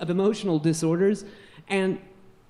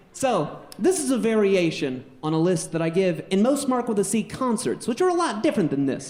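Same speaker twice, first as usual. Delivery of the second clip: ordinary talk, nothing marked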